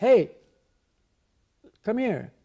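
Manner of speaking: calling out. Showing how to get a person's attention: raised voice to get attention. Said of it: "you may raise your voice a little bit".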